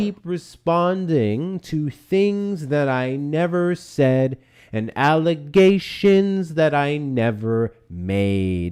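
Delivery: very slow, over-patient, nice and slow delivery. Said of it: "say it real nice and slow".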